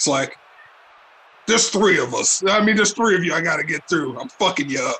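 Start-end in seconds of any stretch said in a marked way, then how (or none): 1.5-5.0 dead intense, menacing muttered voice. Voicing a wrestler taunting his opponent eye to eye: muttered under his breath, intense. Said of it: "he kinda says this under his breath".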